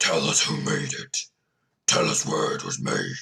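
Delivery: very low, deep, rough, gruff voice. Describing a voice a player hears demanding answers, in a deep, gruff voice. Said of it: "you hear this deep, gruff voice saying".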